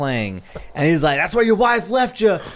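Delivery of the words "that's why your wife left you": very high, shrill, taunting screaming. Retelling a man screaming trash talk at an old man golfing; imitating someone screaming. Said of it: "he's screaming at this like old man".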